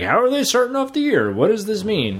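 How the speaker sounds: high, lively, eager delivery.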